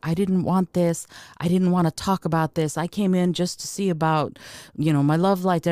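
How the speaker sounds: weeping, tearful, crying through every word. Retelling what a man said while weeping, imitating a man weeping. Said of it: "And he started weeping".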